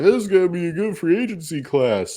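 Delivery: very high, sarcastic sports-media hype voice. Mocking what the media says every year about free agency: mocking imitation of the media. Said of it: "I'm mocking the media".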